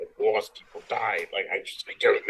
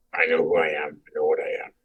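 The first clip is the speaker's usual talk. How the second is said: low, inward muttering to oneself; 4 semitones lower than usual. Voicing a character looking up at the sky: muttering to himself. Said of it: "just mutter to myself".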